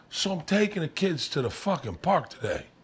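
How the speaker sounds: casual, slightly high delivery. Retelling a comic's backstage parenting story, imitating Dice. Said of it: "Dice proceeds to tell the funniest parenting story".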